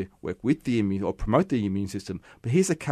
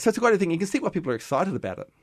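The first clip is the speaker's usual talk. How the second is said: quick, eager, excited rush, pitched very high; 10 semitones higher than usual. Explaining something to another speaker, talking fast. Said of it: "Why I'm talking so fast".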